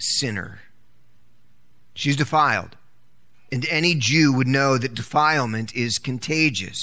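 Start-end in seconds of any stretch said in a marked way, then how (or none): 0.0-0.6 put-on condescending tone on sinner. Retelling what a prophet should know about the woman: mock-condescending 'sinner'. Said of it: "condescending tone".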